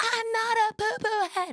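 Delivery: shrill, very high, full-blown screaming meltdown. Retelling a four-year-old niece's phone reply: imitating a child's screaming meltdown. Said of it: "full-blown screaming meltdown at me and was like".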